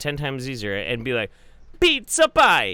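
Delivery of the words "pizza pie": very loud, booming put-on Italian accent. Showing another speaker how to do it: put-on Italian accent. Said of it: "pinch your hand like an Italian".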